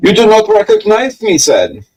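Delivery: loud voice with swooping, swinging pitch. Quoting the German master of disguise from Blackadder: Mad Prince Ludwig voice. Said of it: "Hugh Laurie playing Mad Prince Ludwig of Bavaria".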